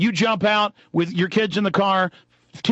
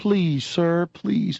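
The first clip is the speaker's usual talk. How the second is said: acted-out pleading, slower. Retelling a man begging a police officer who shoved him, imitating pleading. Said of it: "He starts pleading again".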